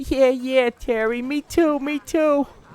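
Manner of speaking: very high-pitched voice. The narrator voices a second stranger in the alley agreeing with terry, higher pitched voice. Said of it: "you hear a higher pitched voice say".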